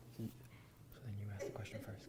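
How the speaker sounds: hushed whisper, close to the ear.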